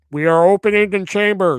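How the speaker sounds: terrible tannoy announcer voice, loud and high. Storyteller recounting captors announcing over the chamber intercom: terrible intercom announcer voice. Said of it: "That's a terrible intercom voice".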